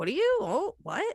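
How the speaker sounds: inquisitive, high voice with rising intonation.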